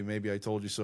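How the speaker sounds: ordinary delivery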